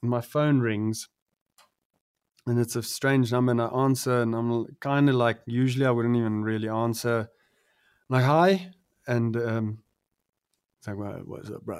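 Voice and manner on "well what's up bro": very quiet, low, hushed, whiskey-gargled worn voice. Act out the caller from a strange number greeting you, in Questa's whiskey-gargling voice. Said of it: "gargling with whiskey since he was like 13".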